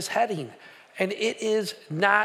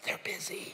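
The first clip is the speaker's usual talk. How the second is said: put-on very soft, hushed, barely voiced child's whisper. Retelling a child answering the phone: imitating a whisper. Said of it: "the kid's whispering all the way through".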